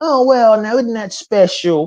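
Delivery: high put-on church lady voice. Saying that Mark Cerny looks like a Saturday Night Live character, do a Church Lady impression. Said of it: "He looks like the church lady".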